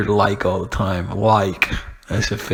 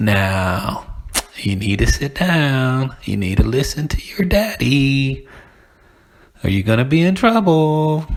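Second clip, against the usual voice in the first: put-on condescending kindergarten-teacher voice, as to small children; 4 semitones higher than usual. Showing how parents talk to their little kids, kindergarten-teacher voice. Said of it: "talking like uh, a kindergarten teacher".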